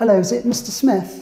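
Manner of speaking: high, loud, very posh voice. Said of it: "I'm gonna put on the poshest voice I can".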